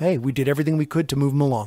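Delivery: normal talking voice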